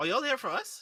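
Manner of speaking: slightly harsh, grating voice. In a role-play game, a voice behind the door answers the group, somewhat abrasive. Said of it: "Still abrasive, but less abrasive than the first time".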